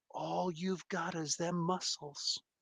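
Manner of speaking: very quiet, barely audible taunting half-whisper. Speaker half-whispers to another character so only they can hear; half-whispering. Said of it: "I whispered just just so you can hear me".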